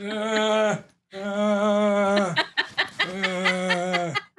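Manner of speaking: very slow, high, drawn-out uhs. Acting out a newly invented creature coming by again: Frankenstein's monster voice. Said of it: "he's like this".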